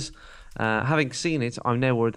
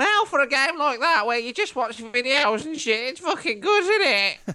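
very high-pitched put-on voice; 3 dB louder than usual. Imitating a friend listening to the show on a beach: impression of Stu. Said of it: "let me do Stu".

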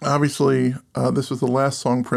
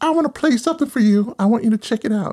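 put-on Southern accent, higher pitch; 9 semitones higher, 3 dB louder than usual. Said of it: "it's a Southern Prince".

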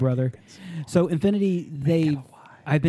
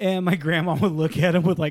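usual speaking voice

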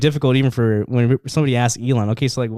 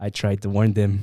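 put-on stern voice, pitched lower; 4 semitones lower, 4 dB quieter than usual. Retelling how Elon warned about it years ago: stern Elon Musk impression. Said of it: "with a sternness in his voice".

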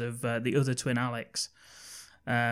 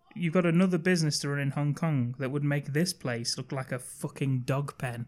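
ordinary talk, nothing marked

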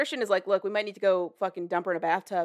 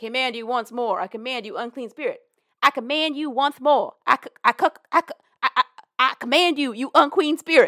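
loud, high-pitched, stammering cartoon voice; 5 semitones higher, 7 dB louder than usual. Retelling a scene where a possessed girl mimics a priest: Porky Pig voice. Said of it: "Doing the Porky Pig voice".

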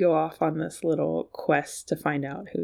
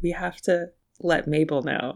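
usual speaking voice

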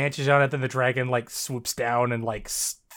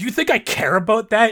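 high, loud, bristling, obviously bothered defensive tone; 8 semitones higher, 7 dB louder than usual. Retelling a character's reply to being called a coward: imitating defensive, obviously bothered denial. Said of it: "in a tone that implies he absolutely does care".

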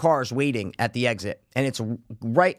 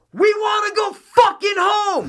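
play-acted, very high, very slow drawn-out scream; 5 dB louder than usual. Retelling yelling at protesters blocking the street: imitating a scream. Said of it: "And I just scream".

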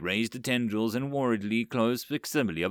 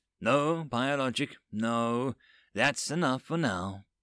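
plain reading voice

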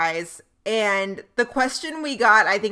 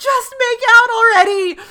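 very high, shrill, very loud shout; 14 semitones higher, 10 dB louder than usual. Retelling yelling at the tv about a dancing couple: imitating yelling at the tv. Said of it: "yelling at the T V".

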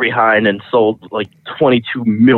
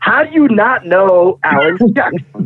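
play-acted berating yell, high and dragged out; 8 semitones higher than usual. Retelling how a woman at a bar yelled at the band: imitating a woman yelling. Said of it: "yelling at us, like".

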